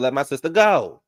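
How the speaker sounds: acted-out, re-enacted scream. Recounting a fight where Wizard got beaten, the speaker acts out retelling a scream. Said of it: "Now I'm screaming".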